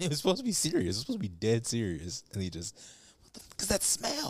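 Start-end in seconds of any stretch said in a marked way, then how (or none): 3.2-4.3 breathy, hushed whispered line. Speaker quotes a line from a serious movie scene, imitating the actor's line reading. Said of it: "The way he said it".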